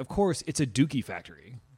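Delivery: ordinary delivery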